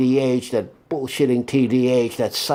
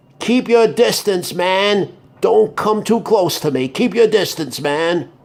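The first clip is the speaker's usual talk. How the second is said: loud, strong, forceful voice, pitched up; 6 semitones higher than usual. Showing listeners what to say when a tall man comes close, loud, strong voice. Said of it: "you say in a loud, strong voice that all around can hear".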